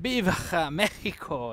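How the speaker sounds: put-on Japanese-accented Spanish. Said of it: "but with a Japanese accent".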